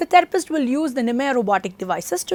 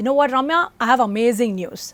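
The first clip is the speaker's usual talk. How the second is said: ordinary talk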